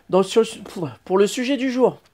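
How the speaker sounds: stumbling, self-correcting speech. Addressing viewers while introducing the day's topic, stumbling over words. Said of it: "je bafouille".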